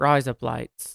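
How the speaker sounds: speaking with an Australian accent. Showing how a phrase sounds like razor blades: Australian accent. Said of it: "that is razor blades in Australian".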